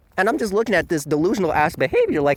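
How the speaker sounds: ordinary talk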